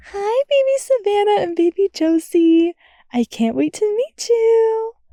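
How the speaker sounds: very high-pitched soft cooing voice. A pregnant woman speaks to her unborn babies, high-pitched cooing. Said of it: "cooed in a high-pitched voice".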